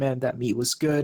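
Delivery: ordinary talk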